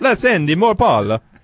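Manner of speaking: put-on high-pitched, slow Italian accent. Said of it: "should I try to read this in the accent".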